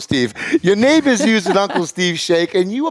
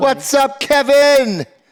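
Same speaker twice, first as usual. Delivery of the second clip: shouting, pitched higher; 7 semitones higher than usual. Greeting someone named kevin: yelling. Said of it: "Stop yelling".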